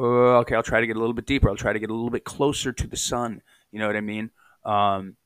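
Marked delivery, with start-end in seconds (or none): none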